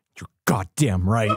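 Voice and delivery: deep, very low muttered aside. Retelling what Nick said as cookies were grabbed: imitating Nick muttering under his breath. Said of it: "Nick just under his breath".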